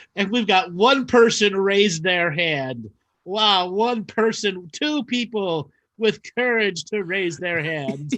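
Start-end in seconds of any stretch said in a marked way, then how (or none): 3.7-8.1 theatrical vampire character voice. Counting the people who raise their hands, in the Count from Sesame Street voice. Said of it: "You sound like the Count from Sesame Street".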